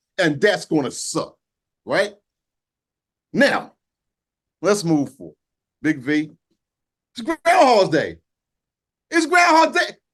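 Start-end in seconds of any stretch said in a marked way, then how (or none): 7.2-9.9 shouting it out, high and raised. Moving forward to a new topic after a complaint, yelling. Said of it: "I'm yelling. I'm sorry".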